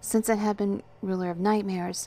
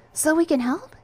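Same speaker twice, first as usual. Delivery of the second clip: keen, eager voice, raised and pitched up; 9 semitones higher, 7 dB louder than usual. A woman answers the narrator's explanation with an eager question. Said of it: "she asked eagerly".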